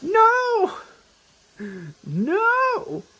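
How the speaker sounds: very high, loud anguished scream.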